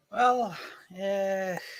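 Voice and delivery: weary, worn-out, tired, soft voice. Guest answers the host's question about his background, sounding tired. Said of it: "He sounds tired".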